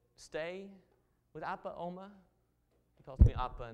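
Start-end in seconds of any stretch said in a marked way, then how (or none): 0.2-2.1 put-on slow, small three-year-old toddler voice. Recalling a child's answer about the move, in his little 3-year-old voice. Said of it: "In his little 3-year-old voice".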